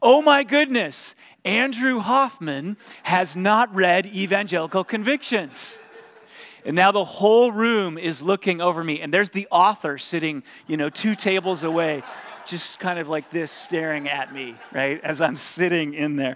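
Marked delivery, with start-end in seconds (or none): 0.0-5.8 loud, booming announcer voice, pitched high. Retelling the youth pastors' mc speaking into his microphone: big booming voice. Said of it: "big booming voice".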